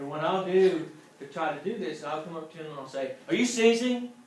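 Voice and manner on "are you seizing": slightly louder, raised, pitched-up voice. Showing how to alert someone who may be seizing: slightly raised voice. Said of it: "just raise my voice just a little bit".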